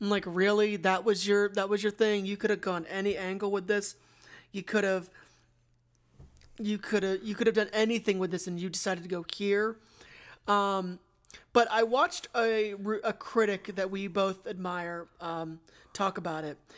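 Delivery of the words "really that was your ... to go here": ordinary talk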